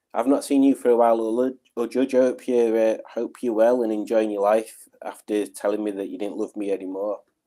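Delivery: ordinary delivery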